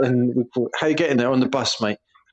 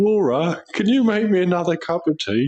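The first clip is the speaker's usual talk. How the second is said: lazy, idle, pitched-up voice; 5 semitones higher than usual. Complaining about their dad, the speaker acts out his request to a family member: imitating their dad. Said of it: "it'll be".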